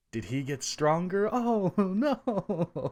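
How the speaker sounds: put-on sarcastic dismay. Imitating people reacting to spoilers: imitating sarcastic fake dismay. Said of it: "we obviously being sarcastic about all this".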